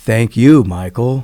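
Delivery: big, very loud, thundering, booming voice. Retelling the voice he heard while meditating, big booming voice. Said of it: "this big voice boomed out".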